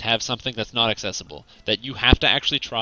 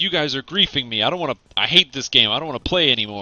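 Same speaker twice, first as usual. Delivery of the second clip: acted-out angry ranting; 2 semitones higher, 3 dB louder than usual. Retelling how a game boss gets mad at players: imitating an angry boss. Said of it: "he gets all mad".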